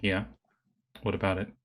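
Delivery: suddenly serious. Voicing a character who turns from smiling to serious. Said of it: "smile to just, like, serious".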